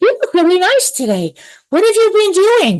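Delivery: high, swooping sing-song voice. Retelling talking to a woman while an angel comes through, in Crystalline's high voice. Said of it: "my voice gets high".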